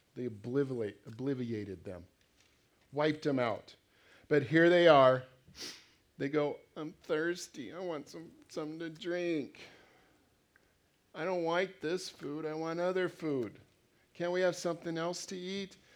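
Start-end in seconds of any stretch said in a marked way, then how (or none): 6.8-15.8 put-on higher-pitched, whining voice, like a kid. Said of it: "tired of their whining".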